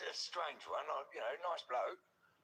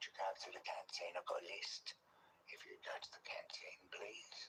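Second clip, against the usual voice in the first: eerie, soft, breathy, gentle near-whisper; 8 semitones lower, 6 dB quieter than usual. Showing how the unblinking prisoner talked: soft-spoken prisoner impression. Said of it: "sort of like this".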